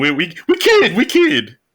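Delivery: high put-on teasing, joking voice.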